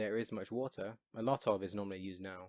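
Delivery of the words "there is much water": ordinary talk, nothing marked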